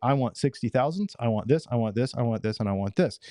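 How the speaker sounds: usual speaking voice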